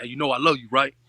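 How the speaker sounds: normal talking voice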